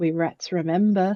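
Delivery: whispering. Whispering a warning to the lift attendant before leaving: whispering to the attendant. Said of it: "I'm gonna whisper to him".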